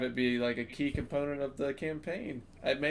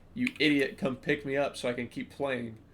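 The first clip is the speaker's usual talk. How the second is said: ordinary talk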